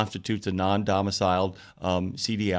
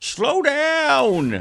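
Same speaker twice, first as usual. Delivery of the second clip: very high, shrill, loud yell, "down" stretched long; 6 dB louder than usual. Urging listeners to stand on the front lawn: yelling at speeding drivers. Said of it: "stand on your front lawn and go".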